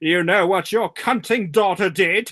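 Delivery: put-on loud, extremely posh English accent. Retelling a line a woman said in a story, most posh English accent. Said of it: "most posh English accent".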